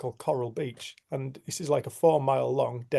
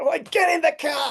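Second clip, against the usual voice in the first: very high-pitched, furious, livid yell; 5 dB louder than usual. Retelling his own past words while chasing another driver: retelling an angry shout. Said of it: "I'm absolutely livid".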